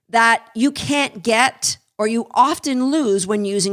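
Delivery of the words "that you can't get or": plain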